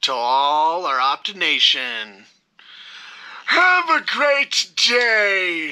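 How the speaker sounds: "day" stretched out with swooping pitch. A host signing off to the audience: Shockwave voice. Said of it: "Why am I sounding like Megatron?".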